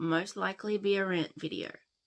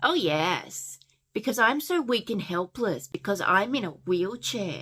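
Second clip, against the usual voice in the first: dripping, very heavy sarcasm; 2 semitones higher, 4 dB louder than usual. Recapping a scene, the speaker acts out a character's reply to a boy, retelling a sarcastic reply. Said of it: "Harley very sarcastically goes".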